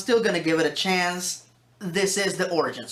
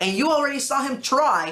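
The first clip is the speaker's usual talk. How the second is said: strong, heavy stress on the word "try"; 7 semitones higher than usual. Retelling a story about a lawyer deputized as a ranger, stress on try. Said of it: "emphasis on the word try".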